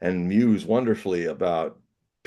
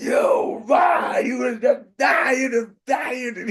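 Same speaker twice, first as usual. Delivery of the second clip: mock furious raging shout, very high. Retelling a story, imitating Gurdjieff tearing into a man: Gurdjieff in a rage. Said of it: "in a tremendous rage".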